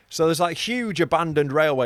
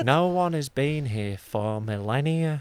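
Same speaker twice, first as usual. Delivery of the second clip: put-on, Mancunian-leaning accent. Doing a Brian Cox impression on request, drifting toward a Mancunian accent. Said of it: "Now he's going more Mancunian".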